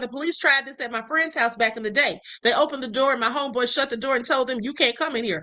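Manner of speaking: plain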